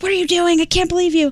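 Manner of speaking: high, furious, put-on angry scream. Retelling the speaker's sister storming out of a car, retelling her screaming. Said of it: "screaming at me, yelling at me".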